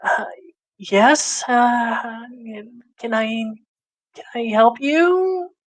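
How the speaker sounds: put-on timid young-sounding voice. Answering a visitor who eyes you up and down, in a meek, younger voice. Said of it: "it seems like a very meek voice, and younger too".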